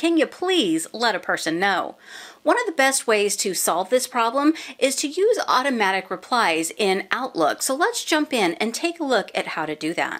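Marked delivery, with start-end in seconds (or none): 0.0-2.0 mock sarcastic little aside in a soft inside voice. Outlook tutorial host acting out her own inner voice, mock-snarky inner voice. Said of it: "my snarky inside voice sometimes says".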